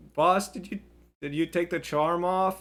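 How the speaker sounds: high, loud yelling.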